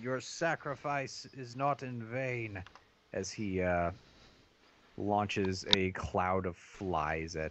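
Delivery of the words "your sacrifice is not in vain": shouting, much higher. Voicing a game character launching magic at his own troops, shouting. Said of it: "He shouts out".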